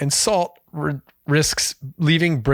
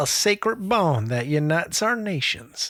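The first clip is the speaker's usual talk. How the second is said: fake Southern American accent; 2 semitones higher, 4 dB quieter than usual. Reading out a written statement while another speaker protests, put-on Southern accent. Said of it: "Why are they Southern?".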